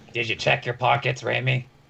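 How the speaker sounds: creaky, rough-edged gruff delivery. Voicing a character answering the party, in a gruff voice. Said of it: "responds in a gruff voice".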